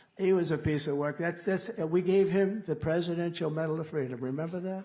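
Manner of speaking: usual speaking voice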